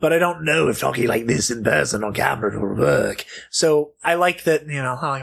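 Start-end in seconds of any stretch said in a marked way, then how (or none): 0.0-3.2 raspy voice coming from the throat. Comparing ways to do a voice, the speaker tries talking from the throat: Mark Hamill animated-voice impression. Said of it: "it works so well from the throat".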